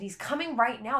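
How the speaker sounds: urgent, high, insistent yell, dead certain. Retelling telling the doctors the baby was coming: retelling her own yell. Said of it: "And I'm yelling at them".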